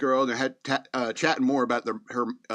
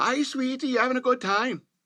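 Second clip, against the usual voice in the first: sweet, high-pitched, put-on Scottish accent; 12 semitones higher than usual. Retelling a Scottish mom greeting her son at a buffet: put-on Scottish accent. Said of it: "However they talk".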